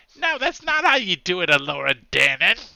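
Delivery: high, loud, grating lecturing voice. Describing a character to the players, in Willow's voice like Warwick Davis. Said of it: "He sounds like Willow from the movie".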